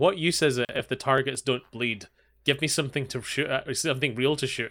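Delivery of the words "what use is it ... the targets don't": usual speaking voice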